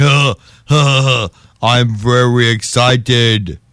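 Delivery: low, deep, slow, drawn-out killer-cyborg voice. Imagining an excited Schwarzenegger after being told to try again: Terminator voice. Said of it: "you're doing Terminator voice".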